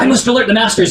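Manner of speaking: startled, surprised, high-pitched scream of alarm. A game master voices a character who spots the players, surprised scream. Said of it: "he screams out in surprise".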